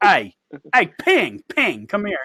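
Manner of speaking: loud, drawling, put-on Virginia coal-country accent. Retelling how a big coal miner called over a man named Ping: Virginia coal miner accent. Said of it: "let's say Virginia, like in the coal mines".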